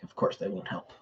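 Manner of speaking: quiet muttering under the breath, as an aside. A tabletop game player, in character holding a staff, muttering to oneself. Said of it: "I will just mutter to myself".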